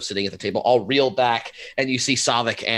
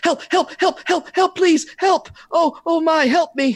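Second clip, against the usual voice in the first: frantic, very high, panicked screaming cries; 4 dB louder than usual. Voicing a person who bursts into the room: panicked screaming for help. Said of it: "bursts in and starts screaming".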